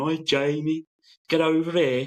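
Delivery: clumsy put-on Brummie accent. Imitating people heard around the yard at work, in a bad brummie accent. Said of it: "I was always terrible at Brummie".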